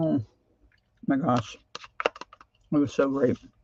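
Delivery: talking with a full mouth. Speaker keeps talking while still eating yogurt, talking while eating. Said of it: "still eating my yogurt".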